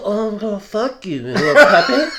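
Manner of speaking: teasing come-on voice. Retelling a movie scene as the leech woman: imitating a seductive voice. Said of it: "seductive at first".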